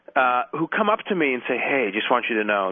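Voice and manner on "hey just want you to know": hushed, quiet voice, lower pitch. Retelling what Gulf leaders say when they come up: imitating someone speaking quietly. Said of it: "they sort of say it on, you know, quietly".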